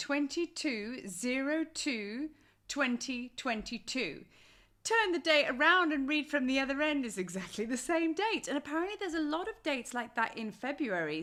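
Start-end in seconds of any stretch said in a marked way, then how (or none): 0.0-4.2 drawn out very slowly, deliberate reading. Reading out the date twenty-two oh two twenty twenty-two, said slowly. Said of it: "I have to say it slowly".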